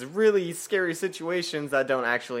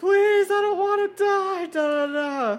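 put-on crying voice, much higher pitch; 3 dB louder than usual. Recounting a scene with a saw coming down: imitating Ashley crying. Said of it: "Ashley's, like, crying".

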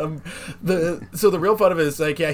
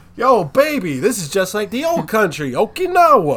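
loud, high, over-the-top exaggerated Italian accent; 5 semitones higher, 6 dB louder than usual. Speaker joking about how an anime's characters talk, doing the Italian guy from Best of the Best voice. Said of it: "talks like the Italian guy from Best of the Best".

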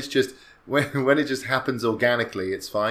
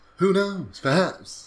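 halting, dramatic put-on voice, pitched higher; 7 semitones higher than usual. Talking on National Talk Like William Shatner Day: William Shatner voice. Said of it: "Are you gonna do the whole podcast like this?".

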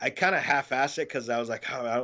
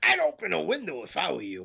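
bad, rough, creaky, swooping comedian voice, blurted; 4 semitones higher than usual. Retelling blurting out a line while being recorded, bad Gilbert Gottfried impression. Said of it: "I channeled a bad impression of Gilbert Godfrey".

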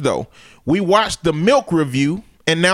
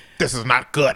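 put-on voice, lower pitch; 5 semitones lower, 4 dB quieter than usual.

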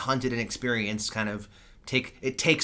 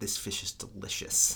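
put-on gritted teeth, lower and quieter; 4 semitones lower, 5 dB quieter than usual. Speaker quotes Will's reluctant remark, imitating Will through gritted teeth. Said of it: "through gritted teeth".

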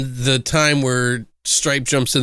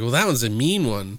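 ordinary talk, nothing marked

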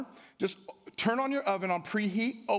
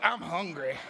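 words pushed out in a growl; 3 semitones lower than usual. Showing the congregation how to say the line: growled line. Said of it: "like with a growl".

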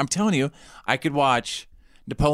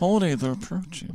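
put-on nerdy character voice, higher and quieter; 4 semitones higher, 4 dB quieter than usual. Saying the line again with jaw pushed out: Kip voice. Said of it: "You sound kinda like Kip".

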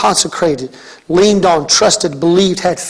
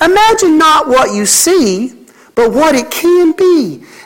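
slow, high-pitched southern drawl; 9 semitones higher than usual. Quoting the little saying she always has, in Erin Napier's southern voice. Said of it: "she says it in that southern voice".

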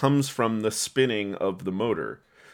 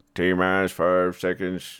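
put-on low, slow, old-timey Texan American accent. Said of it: "old-timey Texan American accents".

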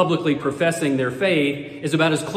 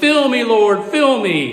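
enthusiastic, raised, pitched-up fervent yell; 7 semitones higher, 5 dB louder than usual. Retelling a joke about a man running down a church aisle: imitating a man yelling.

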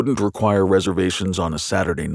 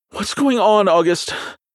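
very high voice shooting up in panic; 13 semitones higher, 4 dB louder than usual. A woman, frightened by the surroundings, asks august what's happening, panicked. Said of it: "her tone filled with panic".

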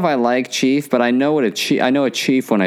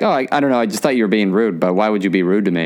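ordinary talk, nothing marked

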